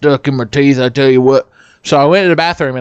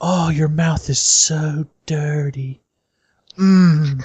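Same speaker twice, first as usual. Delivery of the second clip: mock-seductive, sultry put-on voice; 5 dB quieter than usual. Retelling a woman leaning close to a friend's ear, mock-seductive voice. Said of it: "leaned real close to your ear".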